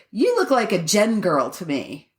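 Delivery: ordinary talk, nothing marked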